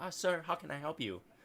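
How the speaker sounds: put-on feminine voice. Describing a voice that answers you: beautiful woman's voice. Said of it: "sounds like a beautiful woman".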